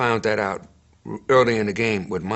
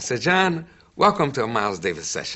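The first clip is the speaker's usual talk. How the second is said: ordinary talk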